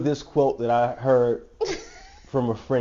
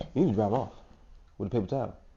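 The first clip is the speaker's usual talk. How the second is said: soft mutter under the breath; 2 semitones lower, 8 dB quieter than usual. Retelling what another speaker said after the tables were cleaned: imitating a mutter under her breath. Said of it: "under her breath, she's saying".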